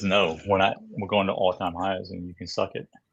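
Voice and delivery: ordinary talk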